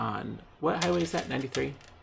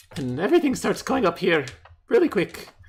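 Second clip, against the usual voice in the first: high, loud, mock Irish lilt. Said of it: "suddenly I become quite Irish".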